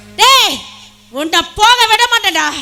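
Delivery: loud angry shout. In a heated drama scene, shouting at a man over Meera: angry shout. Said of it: "ஏன் கத்துற?".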